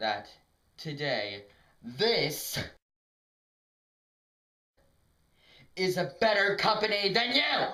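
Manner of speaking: gleeful, overexcited outburst with swooping, rising pitch. Repeating a claim to someone directly, overexcited outburst. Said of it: "I gotta control this".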